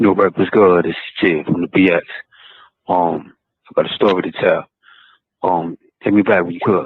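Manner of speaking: haunting, eerie, ghostly, spooky tone. Leaving a voicemail asking for a call back: spooky-sounding voice. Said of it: "you sound spooky as hell".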